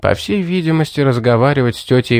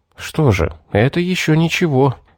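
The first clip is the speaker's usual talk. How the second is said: muttered under breath, higher pitch; 4 semitones higher than usual. The narrator reacts to news of the elders' coming decision, muttered. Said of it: "пробормотал я".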